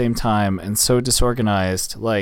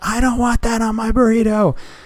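put-on very high, shrill, screechy child screaming; 12 semitones higher, 4 dB louder than usual. Retelling a child's outburst at dinner: imitating a child screaming. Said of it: "he just starts screaming".

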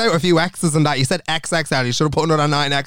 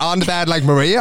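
ordinary talk

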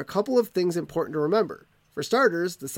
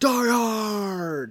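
put-on drawn-out, stretched shout; 4 semitones higher than usual. Retelling how a man shouted from his car window, retelling a shout. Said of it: "and shouted at Bruce Willis".

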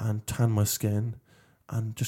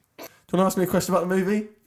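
sentence-final rising pitch on movie, upspeak; 9 semitones higher, 3 dB louder than usual. A speaker who picked up an accent abroad demonstrates rising upspeak intonation. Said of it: "I go up at the end of every sentence".

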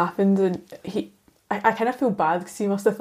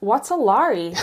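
imitated, put-on American accent; 3 semitones higher than usual. Retelling explaining a tongue twister to Mitch, the speaker imitates Mitch's American accent. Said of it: "shall I do the accent?".

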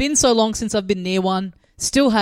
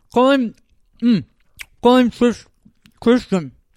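mock mouth-full speech, higher and louder; 4 semitones higher, 5 dB louder than usual. Retelling a couple naming their kid, one with mouth full: mimicking a full mouth. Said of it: "But they had mouth full".

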